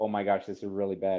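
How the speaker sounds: ordinary talk, nothing marked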